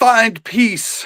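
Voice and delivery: called out loud and high-pitched. Player's character yells at a dodging goblin in a fight; yelling. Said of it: "he yells at him".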